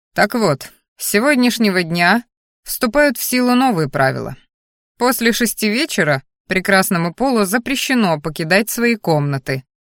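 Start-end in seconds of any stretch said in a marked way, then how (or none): none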